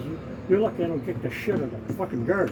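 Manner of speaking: normal talking voice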